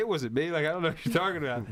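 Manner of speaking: usual speaking voice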